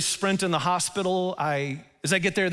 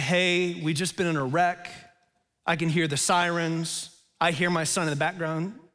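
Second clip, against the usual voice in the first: ordinary talk, nothing marked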